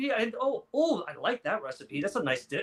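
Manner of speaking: play-acted, sudden, thrilled, swooping excited delight. Retelling how a wife reacted to a meal plan: imitating excited delight. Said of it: "and she got all excited".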